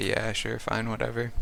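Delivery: normal talking voice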